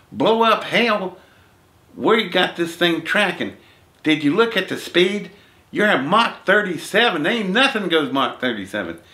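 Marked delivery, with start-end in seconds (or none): 0.2-7.3 acted-out worked-up voice, high and swooping. Retelling a phone call from NORAD: imitating an excited caller. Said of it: "He's a little bit excited".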